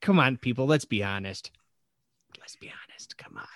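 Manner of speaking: whispered voice. A host urging listeners to answer the weekend poll, whispering. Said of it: "I don't know why I'm whispering".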